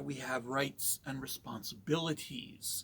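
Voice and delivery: slow, with heavy stress on responsibilities. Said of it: "Emphasis on responsibilities".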